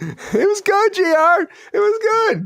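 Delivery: mock high-pitched voice.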